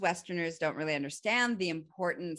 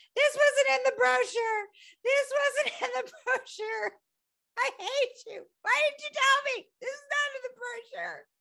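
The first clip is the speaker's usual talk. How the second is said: acted very high, shrill yelling. Retelling yelling at a girlfriend from the jungle floor: imitating own yelling. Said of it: "And I'm yelling at my girlfriend".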